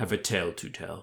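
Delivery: ordinary delivery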